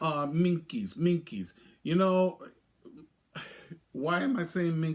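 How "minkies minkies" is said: put-on, exaggerated French accent. Explaining a word borrowed from the Pink Panther: Inspector Clouseau accent. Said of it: "Because Inspector Clouseau from the Pink Panther".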